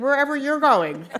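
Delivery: high, loud, laughing mock yell.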